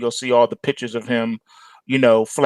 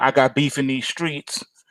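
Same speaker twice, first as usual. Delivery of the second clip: usual speaking voice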